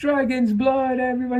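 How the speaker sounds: put-on English accent, very high, shrill and squeaky. Retelling how the squire serving food announced the dish, imitating english accent. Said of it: "he even has the English accent going on".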